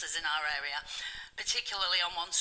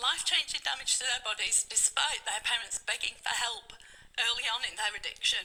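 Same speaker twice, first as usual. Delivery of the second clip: getting emotional mid-sentence, voice pitched up; 5 semitones higher than usual. Speaking to the public, getting emotional. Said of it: "I'm getting emotional".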